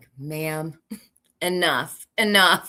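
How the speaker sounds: mock exasperated, fed-up, cutting in sharply. Voicing what the receptionist would like to say to the caller: imitating the receptionist, fed up. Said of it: "She's like".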